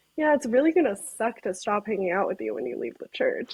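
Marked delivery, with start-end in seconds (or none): none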